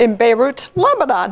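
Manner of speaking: choked-up, emotional, voice catching. Recounting a conversation that is personal to the speaker, choking up. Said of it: "I'm going to choke up because it's so personal to me".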